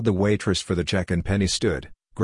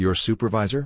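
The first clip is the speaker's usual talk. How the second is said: usual speaking voice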